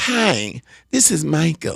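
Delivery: deliberately terrible, overdone put-on voice with swooping pitch. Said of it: "imitating you doing a horrible".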